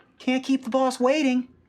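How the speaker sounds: put-on very high little kid's voice. Voicing a raven person that copies voices: child's voice. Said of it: "in sort of like a child's voice".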